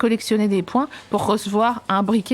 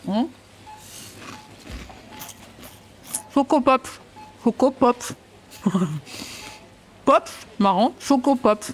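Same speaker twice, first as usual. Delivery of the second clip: talking with mouth full, higher; 2 semitones higher than usual. Speaker demonstrates saying the cereal's name while talking with mouth full. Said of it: "tu peux dire avec la bouche pleine de Chocopops".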